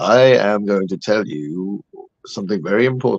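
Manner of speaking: odd, filtered, machine-like AI narrator voice, low. Imitating a narrator whose voice sounds filtered, in a strange AI-like narrator voice. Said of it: "really strange voice that sounds like it's an AI".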